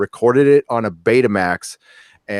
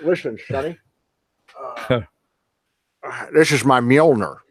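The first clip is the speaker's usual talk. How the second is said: put-on Scottish accent; 2 semitones higher than usual. Showing off a Thor figure, speaking as it: Sean Connery Thor voice. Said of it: "you wanna see Sean Connery Thor?".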